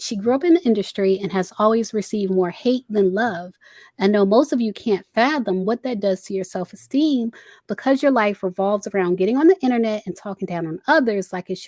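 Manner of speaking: ordinary talk, nothing marked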